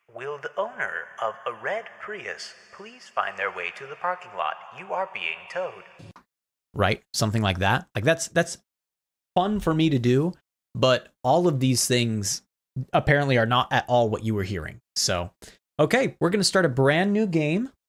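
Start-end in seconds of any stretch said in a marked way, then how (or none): 0.1-5.8 soft, distant store tannoy announcement voice. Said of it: "make it sound as though I'm speaking on a ... Walmart overhead tannoy system".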